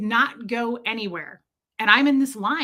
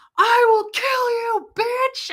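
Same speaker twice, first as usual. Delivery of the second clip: put-on screaming, higher pitch; 12 semitones higher, 3 dB louder than usual. Retelling a road argument, quoting the other driver: imitating a man screaming. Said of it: "screaming in broad daylight".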